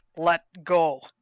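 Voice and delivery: firm, stern voice full of authority. Voicing Talia trying to intimidate Xerxes: a stern, authoritative command. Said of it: "just say incredibly sternly and authoritatively".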